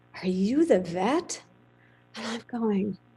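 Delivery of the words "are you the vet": slow, disgusted, incredulous, put-off surprise. Retelling a cowboy's first question to the new vet: imitating disgusted surprise. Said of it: "this look of kind of disgust and surprise at the same time".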